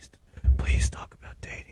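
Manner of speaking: hushed, sad, begging whisper. Imitating a viewer's message asking for dating talk: imitating a sad plea. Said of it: "I could just hear the person just".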